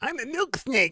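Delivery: weird high, soft, can't-breathe cat voice. Speaker voices their pet cat, weird can't-breathe cat voice. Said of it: "So now my cat talks like that".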